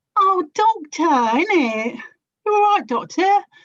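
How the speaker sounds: botched attempt at a very high character voice. Giving a go at a Donna impression after being asked: Donna from Doctor Who voice. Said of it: "I did once play Donna from Doctor Who".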